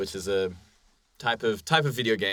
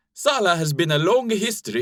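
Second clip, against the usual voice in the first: very high-pitched, loud put-on Finnish accent; 9 semitones higher, 6 dB louder than usual. Reading a quote aloud as a best attempt: attempted finnish accent. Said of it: "here goes my best attempt at a Finnish accent".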